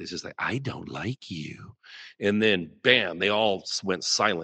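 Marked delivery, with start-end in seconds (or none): 0.4-1.7 imitated creepy voice, quieter, slower, lower. Telling others about a voice they heard, imitating a creepy voice. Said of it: "this voice is so creepy".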